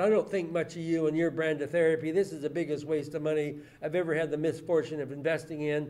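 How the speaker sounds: ordinary talk, nothing marked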